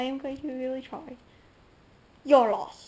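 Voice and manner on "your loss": nasty, spiteful, very loud snarl. Trying to copy how she spoke: mock-nasty snarl. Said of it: "she just snarls in one of the worst tones that I have ever heard".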